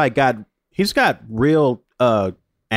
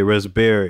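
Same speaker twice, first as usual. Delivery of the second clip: raspberry, with stress on the berry syllable; 4 semitones lower than usual. Retelling someone's weird pronunciation of raspberry, stress on berry in raspberry. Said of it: "I'm gonna put the stress syllable on Barry".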